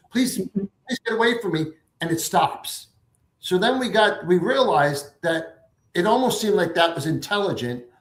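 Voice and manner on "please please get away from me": mock frantic, high, panicked voice. Retelling her words as the meter spiked in the woods: imitating panicked pleading. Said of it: "She was panicked".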